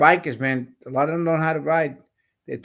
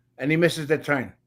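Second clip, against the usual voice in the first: ordinary talk, nothing marked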